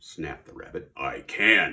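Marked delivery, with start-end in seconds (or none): 1.0-1.7 low, growling storybook bear voice. Narrator reading a story, the bear answers the rabbit: growling bear voice. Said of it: "growled the bear".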